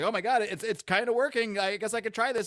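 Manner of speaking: fake confused. Recounting a superhero show scene, doing Lombard feigning confusion. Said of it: "he acts like he doesn't know what he's doing".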